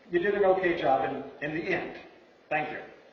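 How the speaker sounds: ordinary delivery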